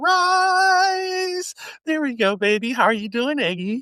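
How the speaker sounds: pitched very high. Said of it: "let's see if I can go up here".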